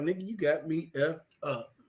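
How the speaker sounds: sassy delivery with full attitude. Retelling how a woman in church twirled her ponytail: imitating a woman's sassy retort. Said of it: "old girl was back there twirling, uh, her ponytail like".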